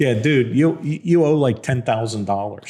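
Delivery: normal talking voice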